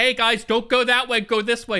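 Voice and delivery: put-on high, urgent shout calling out. Retelling trying to direct a crowd of sorority girls: retelling own screaming. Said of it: "but I was screaming".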